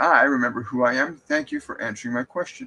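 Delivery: normal talking voice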